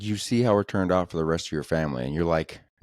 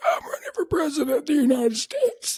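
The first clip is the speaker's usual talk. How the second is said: very high, voiceless, barely-there haunting grim-reaper voice. Imitating a candidate who sounds like death: RFK Junior impression, haunting, no voice. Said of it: "sounds like what I think the Grim Reaper would sound like".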